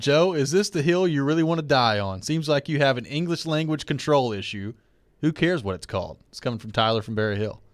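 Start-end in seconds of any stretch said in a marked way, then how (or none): none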